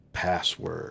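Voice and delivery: deep, raspy, hoarse voice. Voicing a suit of armor that comes to life: deep raspy armor voice. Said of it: "you hear a deep, raspy voice say".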